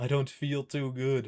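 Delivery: attempted, not fully convincing Indian accent. A speaker tries an accent, then admits they can't do it: attempted indian accent. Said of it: "I can't do an Indian voice".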